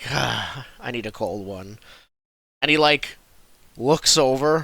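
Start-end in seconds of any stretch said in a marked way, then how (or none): 0.1-1.8 low, tired, worn-out knight voice. Voicing a knight who walks into the inn tired: tired knight voice. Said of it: "He's like".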